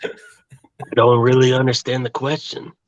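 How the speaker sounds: put-on seductive voice. Asked for a Kenny Payne impression, the speaker tries one: mock-seductive Kenny Payne impression. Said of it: "sounds like you're trying to seduce a woman".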